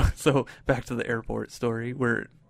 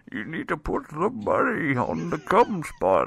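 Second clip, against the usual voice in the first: put-on character voice with wide, swooping pitch; 4 semitones higher than usual. Retelling how to play craps in a Bane voice. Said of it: "but in Bane voice".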